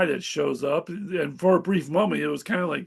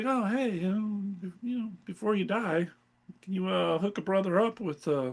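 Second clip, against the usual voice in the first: mock nonchalant tone, quieter; 2 semitones higher, 6 dB quieter than usual. Retelling how a comic character reacted to a death: imitating a nonchalant character. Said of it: "he's so nonchalant about it".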